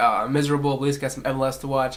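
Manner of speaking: ordinary talk, nothing marked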